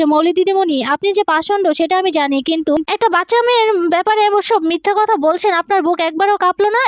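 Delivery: ordinary delivery, nothing marked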